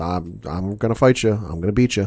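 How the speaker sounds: put-on flat, deadpan voice. Imitating a fighter at a press conference: imitating Khabib's deadpan Ben Stein type voice. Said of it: "like a Ben Stein type voice, just sitting there deadpan".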